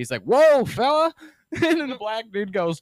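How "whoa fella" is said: loud, high-pitched cartoon voice. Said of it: "that voice reminds me of Goofy".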